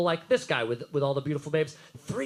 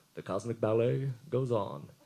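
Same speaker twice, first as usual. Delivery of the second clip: slow, deliberate, drawn-out, unhurried narrating voice; 8 semitones lower than usual. Quoting a monorail scene from The Simpsons: Leonard Nimoy voice. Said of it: "I'm just amazed he's doing the voices".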